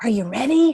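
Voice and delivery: almost whispering. Showing a speaker how to pause before a key line: almost whispering, like a secret. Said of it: "almost whispering like you're giving them a little secret".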